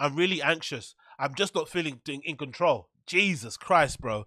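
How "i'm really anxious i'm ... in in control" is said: usual speaking voice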